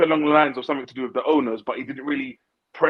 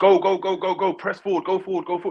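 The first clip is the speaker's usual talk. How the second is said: shouting, pitched higher; 5 semitones higher than usual. Retelling shouting at the tv screen during matches: imitating own shouting. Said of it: "I'm shouting at the T V screen saying".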